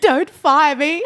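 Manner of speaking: acted, very loud, high, tearful crying voice. Retelling a first day after taking the station off air: retelling own past crying. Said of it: "I just remember crying, going".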